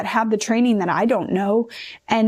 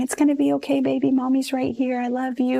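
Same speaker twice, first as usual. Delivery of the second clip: acted whisper at a higher pitch; 3 semitones higher than usual. Mother retelling what she said to her baby during the IV attempts, retelling a whisper. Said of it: "just whispering".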